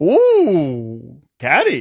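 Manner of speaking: swooping put-on Swedish accent, sing-song, long ooh. Talking about IKEA, trying a Swedish accent. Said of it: "What accent was that?".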